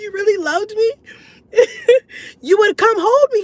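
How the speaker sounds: very high, fake crying, tearful voice. Retelling pleading with a partner to come hold her: mock crying. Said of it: "I'm not really crying".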